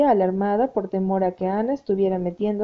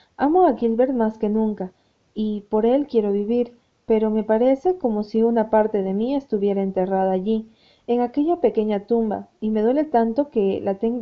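usual speaking voice

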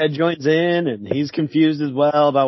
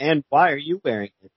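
ordinary talk, nothing marked

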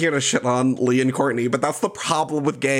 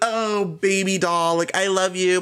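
slow, sugary, venomous fake-sweet voice; 4 semitones higher than usual. Retelling a reality-show contestant's message: imitating aggressively fake sweetness. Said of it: "that voice at the beginning".

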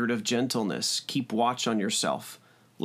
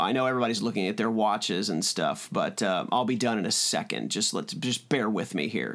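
plain

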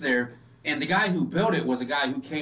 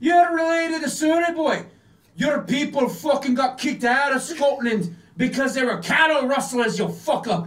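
put-on thick Scottish accent, loud and very high; 11 semitones higher, 5 dB louder than usual. Retelling what someone behind him said, in a thick scottish accent. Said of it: "someone from behind him with a thick Scottish accent he heard goes".

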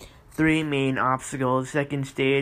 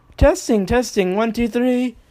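noticeably higher pitch, slower pace; 9 semitones higher, 7 dB louder than usual. Speaker trying another voice during a sound check, slightly higher voice. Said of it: "My voice is a bit higher now".

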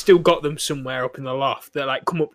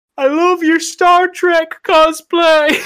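very loud, very high, drawn-out yelling; 9 dB louder than usual. Retelling teasing Star Wars fans at conventions: imitating own shout. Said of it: "me shouting at Star Wars fans".

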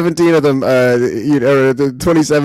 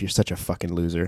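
hushed, muttered whisper under the breath; 7 semitones lower, 13 dB quieter than usual. Retelling what the wife behind the speaker whispers: imitating someone whispering. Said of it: "whispering to herself".

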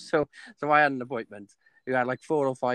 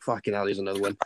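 mock mutter under breath, quieter, lower, faster; 4 semitones lower, 3 dB quieter than usual. Retelling what a man says each time he comes in: retelling a muttered aside. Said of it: "he's saying it under his breath".

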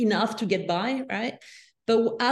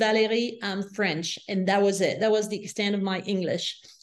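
normal talking voice

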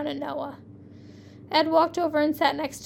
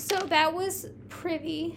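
usual speaking voice

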